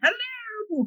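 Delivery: slow, silly, goofy hermit-guy voice. Acting out a hermit guy greeting visitors: silly hermit guy voice. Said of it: "one hilarious hermit guy going".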